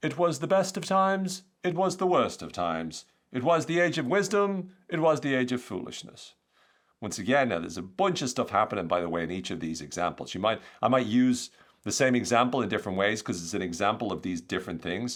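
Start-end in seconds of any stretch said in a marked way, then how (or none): 0.0-6.3 put-on old English accent, pitched up. Quote Charles Dickens as an example for your listeners, in a put-on old English accent. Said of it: "I'm going to put on my best old English accent".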